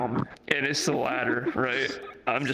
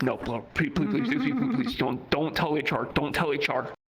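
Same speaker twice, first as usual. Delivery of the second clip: put-on desperate, frantic voice. Retelling begging a coworker not to tell hr: imitating own desperate pleading. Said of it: "I was like".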